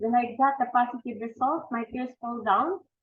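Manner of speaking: normal talking voice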